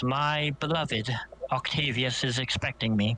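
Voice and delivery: affectionate, fond, loving and tender voice. Voicing a character whose expression softens: affectionate voice. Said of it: "you hear affection in her voice".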